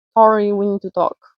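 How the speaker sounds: put-on very harsh, severe, hard-edged, stern voice. Retelling how a school manager came up to the speaker, imitating a harsh voice. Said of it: "came up to me with this very harsh voice".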